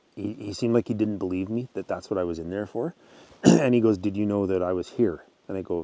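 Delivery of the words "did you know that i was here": plain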